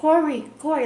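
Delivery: very loud, high yelling call. Recalling hearing mom's voice calling while unable to wake, imitating her yelling. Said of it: "like yelling at me almost".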